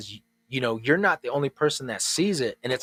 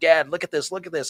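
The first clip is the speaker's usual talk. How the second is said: put-on yelling voice, pitched higher; 3 semitones higher than usual. Retelling a son calling out during meditation: imitating son yelling. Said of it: "yelling at me".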